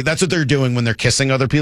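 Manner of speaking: ordinary talk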